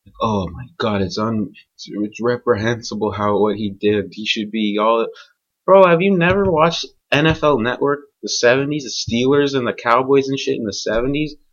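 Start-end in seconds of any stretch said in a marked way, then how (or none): 0.2-5.1 mock solemn, somber, funereal tone. Mocking how people talked about what he did, in a mock funeral voice. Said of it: "like it sounded like they were in a funeral".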